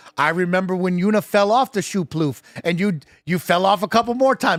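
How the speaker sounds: normal talking voice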